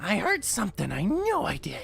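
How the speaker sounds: very high-pitched, loud, swooping character voice. Game master voicing a character the players hear, in a very high-pitched voice. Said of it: "you hear just a very like high pitched".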